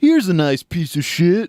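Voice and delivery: silly, dopey, goofy put-on voice. Quoting a line the way he delivers it: goofy voice. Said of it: "He actually does it with like a goofy voice".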